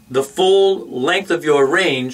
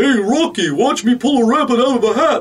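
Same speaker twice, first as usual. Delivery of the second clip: silly cartoon voice with dropped larynx; 8 semitones higher than usual. Explaining a dropped larynx sound, the coach demonstrates a Bullwinkle voice. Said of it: "which sounds silly, but that's a drop larynx sound".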